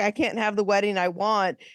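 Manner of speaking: mild, token, lightly sketched yell. Retelling what a man said about his wedding, imitating someone yelling. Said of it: "he's yelling at you like".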